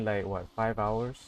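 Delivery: plain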